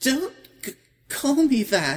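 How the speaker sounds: very high, tearful, stumbling stammer while crying. Tavi, asked what's wrong, answers while crying. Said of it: "are you crying?".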